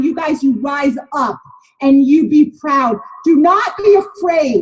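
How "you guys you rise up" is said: normal talking voice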